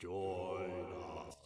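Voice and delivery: eerie, low, hushed, very soft, creepy voice. Something weird in the house calls out to the others, creepy voice. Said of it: "there's a creepy voice saying "Join us."".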